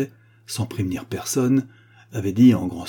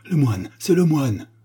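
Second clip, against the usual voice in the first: cried out, high and sudden; 6 semitones higher than usual. Narrator reading a story, a prince among dinner guests, crying out. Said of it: "s'écria".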